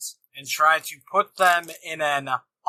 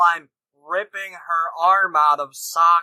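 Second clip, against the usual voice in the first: normal talking voice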